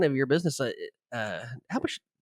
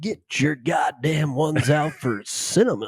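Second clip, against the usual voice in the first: slow club emcee announcer voice; 4 dB louder than usual. Retelling a running joke with a friend about a stripper, in a strip club announcer voice. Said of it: "we do it in that voice".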